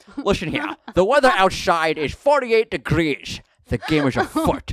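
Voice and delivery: put-on Scottish accent. Voicing a Google Home assistant giving the weather: Sean Connery voice. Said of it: "Or Sean Connery".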